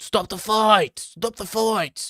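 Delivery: play-acted very high, frantic, fuming scream. Imagining a fighter's reaction to a fight, imitating Dan Hardy screaming. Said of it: "Dan Hardy would be fuming".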